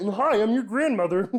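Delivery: high-pitched froggy puppet voice. Retelling how a family member greets the speaker, in a Kermit the Frog voice. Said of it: "everyone in my family sounds like Kermit the Frog".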